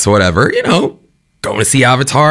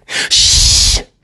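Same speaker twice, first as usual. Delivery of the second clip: put-on shushing sound. Retelling an attempt to quiet noisy kids, imitating a shush. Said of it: "I had tried with a bit of like".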